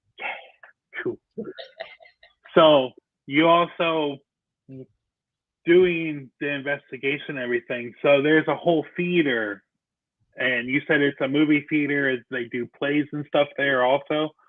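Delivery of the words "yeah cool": soft, unvoiced whisper under the breath. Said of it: "I was like".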